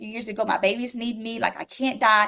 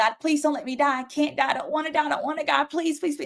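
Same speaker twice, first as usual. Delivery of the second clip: mock urgent, desperate, repeated begging tone; 4 semitones higher than usual. Recounting the moment they knew they were dying, the speaker reenacts screaming at god. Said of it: "I started screaming at God".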